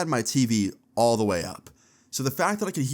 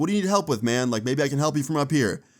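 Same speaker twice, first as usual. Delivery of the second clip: acted-out calling out; 3 semitones higher than usual. Retelling calling down from a window to a man: retelling own yell to the street. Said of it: "So I yelled back".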